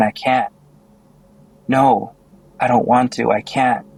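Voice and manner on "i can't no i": ordinary delivery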